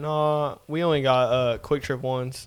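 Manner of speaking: acted sarcastic, snarky smart-ass tone. Retelling a reply to a customer asking for gift cards: retelling a smart-ass reply. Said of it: "I kinda said it, like, smart assy".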